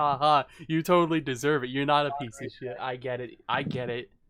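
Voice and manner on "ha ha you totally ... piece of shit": loud, play-acted, sarcastic, rubbing-it-in tone. Mocking another speaker's congratulations as fake: imitating someone being sarcastic. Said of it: "Your sarcasm is palpable".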